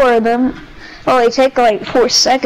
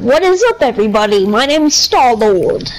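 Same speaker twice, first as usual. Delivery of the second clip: annoying, grating online streamer intro voice. Describing a guy watched online, copying his intro: annoying Star-Lord voice. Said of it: "he's so annoying, his voice".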